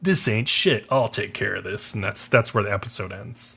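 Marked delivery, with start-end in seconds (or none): 0.0-1.9 put-on grunted speech. Retelling an episode scene where Thorfinn faces archers: imitating a grunted line. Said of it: "he kinda grunts at them and he's like".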